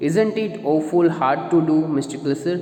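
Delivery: ordinary delivery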